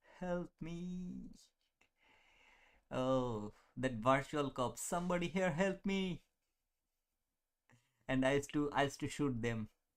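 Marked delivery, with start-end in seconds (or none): 4.8-6.3 high-pitched shouting, yelled out. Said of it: "Why are you shouting?".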